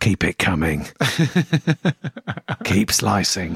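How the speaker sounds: alpha swaggering voice, low and slow. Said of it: "maybe I should try and alpha him".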